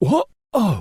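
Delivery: plain reading voice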